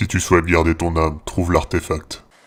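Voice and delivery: low, deep, solemn, grave voice. Retelling what a voice told them yesterday, deep grave voice. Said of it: "avec sa voix grave me dire".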